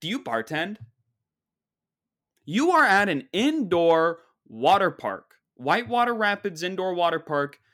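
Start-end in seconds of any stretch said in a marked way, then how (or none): 0.0-0.8 play-acted haughty, high-and-mighty, condescending delivery. Acting out how someone talks down to a bartender, mock-condescending high and mighty tone. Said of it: "The high and mighty, "I'm better than you, you're a measly bartender".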